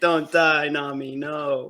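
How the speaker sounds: acted out bawling, sobbing, dragged out very slow. Retelling a scene where Sanji cries over sick Nami: imitating Sanji crying. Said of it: "Sanji's just crying".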